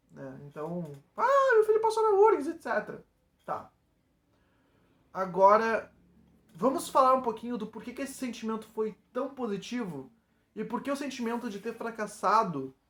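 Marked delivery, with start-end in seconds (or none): 1.1-2.4 shrill, very high, loud shout. Retelling how his mother shouted the news to everyone at work, imitating someone shouting. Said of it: "ela saiu gritando pra todo mundo".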